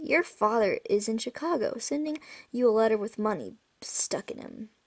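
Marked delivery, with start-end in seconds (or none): none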